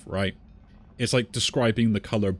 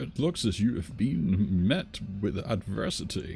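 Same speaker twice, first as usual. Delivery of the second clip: put-on elderly old man voice, very slow; 4 dB quieter than usual. Voicing a character greeting a fellow disciple in a game, old man voice. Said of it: "that goes to my old man voice".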